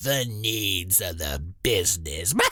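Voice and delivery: heavy, scornful tone dripping with contempt. Repeating a hated management phrase: heavy disdain. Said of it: "Can I say that with any more disdain in my voice?".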